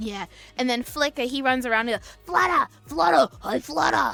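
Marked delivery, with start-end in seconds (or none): 2.3-4.2 put-on super loud, high, rough voice. Describing the characters, acting out what Flicker shouts running around: super loud Flicker voice. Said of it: "He's super loud".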